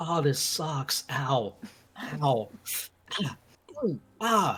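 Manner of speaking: mock, very slow pained groans, winces, ows and ahs. Retelling how the souls in the Circle of Frauds reacted: imitating pained wincing. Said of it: "But everyone was like".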